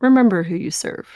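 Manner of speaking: whispered delivery. Voicing a familiar voice that warns a player's character: whispering in your ear. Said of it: "whispering in your ear".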